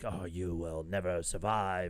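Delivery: low, dropped-down voice. Retelling reading a quoted line in the rhythm of Palpatine: Palpatine voice. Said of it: "Senator Pal-, uh, Palpatine being like".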